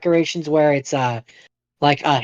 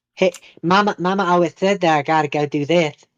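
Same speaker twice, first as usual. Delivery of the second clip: put-on lispy movie-character voice. Describing a movie role, the speaker does a weird lispy Bobby Boucher voice. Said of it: "that kind of weird lispy accent kind of thing".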